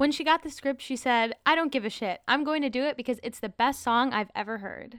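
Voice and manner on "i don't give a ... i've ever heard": ordinary talk, nothing marked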